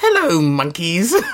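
high cartoon villain voice. Quoting a villain's first line to a co-host, doing a Frieza impression. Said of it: "That was a great Frieza impression".

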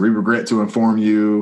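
normal talking voice

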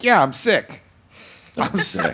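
mock laughing voice. Imitating a friend's reply in conversation: imitating someone saying it with a laugh. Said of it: "with a laugh".

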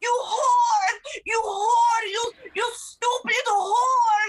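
put-on, very slow, stretched-out, loud shouting. Telling how people outside the club screamed at the speaker, imitating people screaming. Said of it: "they're screaming at me".

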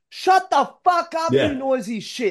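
high, full-throated, all-out scream. Retelling screaming at a phone during a show: imitating own screaming. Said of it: "I'm screaming at my phone at first".

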